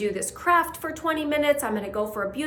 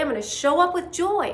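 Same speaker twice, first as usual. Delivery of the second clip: lively, energized, excited, raised voice; 4 semitones higher than usual. Showing how to change inflection to generate joy: raised, excited voice. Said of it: "I just change the inflection in my voice. I raise my voice. I get excited".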